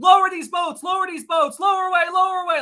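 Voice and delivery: frantic, very high, rushed panicked screaming. Retelling a tense exchange on a sinking ship: imitating Ismay screaming. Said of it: "he started screaming".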